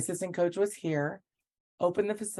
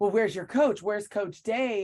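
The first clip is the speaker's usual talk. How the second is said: mock demanding, interrogating tone; 3 semitones higher, 4 dB louder than usual. Retelling how an assistant coach questioned her: mock interrogating tone. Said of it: "started interrogating her".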